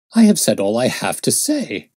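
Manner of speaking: sounding affronted, offended and put out. Gregson, pressed with more questions about the case, answers in an offended voice. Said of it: "in an offended voice".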